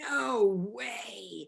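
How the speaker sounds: sudden, raw, loud, rough acted shout, drawn-out "no". Author retelling her husband reading the finished manuscript: imitating a sudden shout. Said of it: "I hear him suddenly shout".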